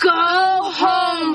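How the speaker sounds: high, loud shouting.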